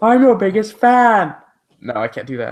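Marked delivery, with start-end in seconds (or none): 0.0-1.4 high-pitched, loud character voice. Asked to do an impression of Fan, the speaker performs it; Fan impression. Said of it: "doing an impression of Fan".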